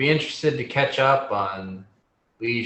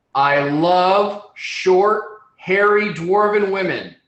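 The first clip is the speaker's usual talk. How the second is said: very loud, very clear, high shout with "love" stretched; 8 semitones higher, 7 dB louder than usual. Voicing a character who calls out from the front of the estate: yelling very loudly and clearly. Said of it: "yell out very loudly, very clearly".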